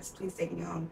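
mock tearful crying. Retelling what they said to him, acting out crying while pleading. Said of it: "I'm like crying".

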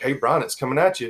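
plain

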